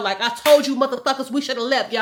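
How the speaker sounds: acted angry outburst. Recounting what they yelled at the others in a dangerous situation, retelling an angry outburst. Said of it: "I was going off on their ass".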